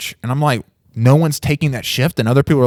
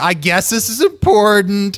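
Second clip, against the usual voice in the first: dripping sarcasm throughout, pitched up; 8 semitones higher than usual. Speaker retells Roberto's reply when asked to talk now, mock-sarcastic, imitating Roberto. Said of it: "he's already starting off like super sarcastic".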